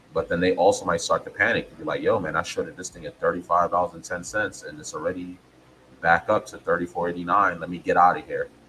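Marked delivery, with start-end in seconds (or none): none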